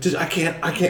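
high, soft, panicked, freaking-out voice. Retelling when the cops came, he replays answering his mom, freaking out. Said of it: "I'm like freaking out".

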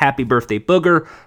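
ordinary talk, nothing marked

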